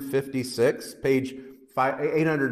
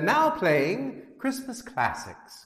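put-on British-accented smart speaker assistant voice, pitched up, sing-song; 6 semitones higher than usual. Telling how her desk assistant answered, imitating British voice assistant. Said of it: "I use the British voice for my little lady".

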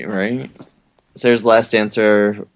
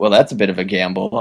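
usual speaking voice

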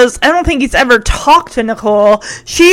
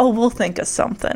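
mock smug smarmy voice, lower and quieter; 4 semitones lower, 11 dB quieter than usual. Retelling a boy's reply to a girl's thanks: imitating a smarmy reply. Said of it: "he's so smarmy".

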